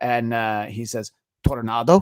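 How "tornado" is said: loud, exaggerated Spanish accent on tornado. Retelling a joke from an old news sketch: imitating an overemphasized Spanish pronunciation.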